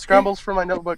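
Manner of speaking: ordinary talk, nothing marked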